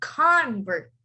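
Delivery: "convert" with stress on first syllable. Explaining noun versus verb stress, the speaker says the noun: stress on first syllable of "convert". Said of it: "the first word is a noun".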